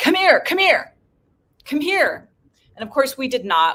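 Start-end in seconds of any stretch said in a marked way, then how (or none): 0.0-2.3 very high-pitched, loud yelling. Retelling armed men calling out from a Jeep: imitating soldiers yelling. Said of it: "they start yelling to Jennifer and I".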